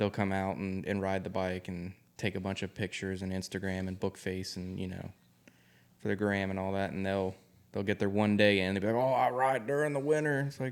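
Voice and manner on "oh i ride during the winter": boastful, bragging motorcycle biker voice. Imitating fair-weather riders at work bragging: Harley rider voice. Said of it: "That was the Harley voice".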